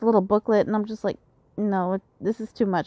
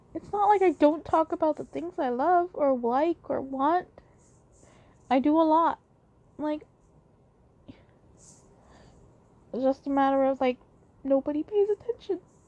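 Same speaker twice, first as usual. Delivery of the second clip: tearful, crying voice, higher; 6 semitones higher, 3 dB quieter than usual. Explaining frustration that nobody pays attention to gifts: crying while talking. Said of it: "I'm starting this episode with crying".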